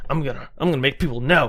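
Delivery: angry, worked-up, flipping-out outburst. Retelling being furious and deciding to tell people: imitating own angry outburst. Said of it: "like, flipping out".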